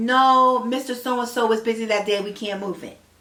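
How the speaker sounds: put-on sarcastic voice. Retelling her reply to a request to move the court date: imitating someone being sarcastic. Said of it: "she was being sarcastic".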